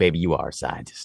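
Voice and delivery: smooth, flirty come-on delivery. Imitating a guy trying to get in her pants: imitating a guy flirting. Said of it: "some guy's just trying to get in her pants".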